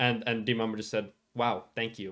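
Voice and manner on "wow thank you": mock heavy, dripping sarcasm, very sarcastic. Retelling someone's reply to a chatter's point, imitating a sarcastic tone. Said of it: "in a very sarcastic tone".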